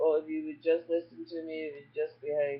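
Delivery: normal talking voice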